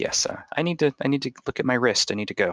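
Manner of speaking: awkward, uneasy. Narrator voices a man asked about the right-hand man, answering uncomfortably. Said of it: "uncomfortably clears his throat and says".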